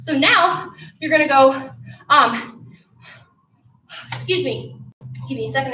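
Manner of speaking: winded, panting, catching air between words. Leading a burpee workout, the speaker pauses to apologize to the group, out of breath. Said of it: "I need to catch my breath here".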